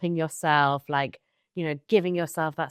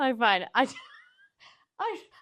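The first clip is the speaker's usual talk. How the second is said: giggly, higher-pitched talk, swooping into laughter; 9 semitones higher than usual. Greeting a co-host at the start of a podcast, laughing while talking. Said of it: "I don't know why I'm laughing".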